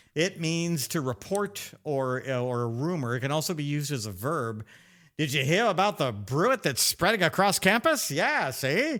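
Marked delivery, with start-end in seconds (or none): 5.1-8.1 put-on old-timey accent, much faster. Presenting 'brew it' as a Middle English word, using it in an old-timey guy accent. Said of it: "That's my old timey uh, guy accent".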